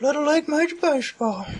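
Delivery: put-on old person voice. Answering the host's question in a role-play, Herbert voice. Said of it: "The old neighbor guy".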